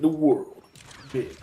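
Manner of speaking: slow, dramatic movie trailer narrator voice. Describing a game trailer to friends: dramatic movie trailer narrator voice. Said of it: "the typical narrator shit".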